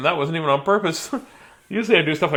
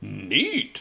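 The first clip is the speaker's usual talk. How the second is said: put-on grandpa voice, lower and quieter; 7 semitones lower, 6 dB quieter than usual. Reading a story aloud, voicing the grandmother's reply: Grandpa voice. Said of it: "Grandpa's voice for no reason".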